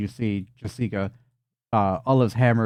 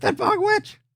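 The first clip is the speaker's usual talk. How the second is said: very high, frantic, panicked pixie-like shriek. Voicing pixies who see a bug witch: pixies screaming in panic. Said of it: "they just start to scream and freak the fuck out".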